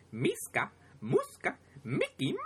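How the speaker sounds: high, bouncing pitch. Quoting a line from a Disney Afternoon cartoon, in Mickey Mouse voice. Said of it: "you like [name]'s Mickey Mouse voice".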